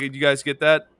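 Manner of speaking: ordinary delivery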